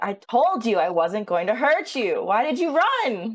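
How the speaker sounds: full-on, loud, high-pitched, disappointed scolding. Speaking in character to a fleeing kobold: disappointed mom voice. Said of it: "I go full mom".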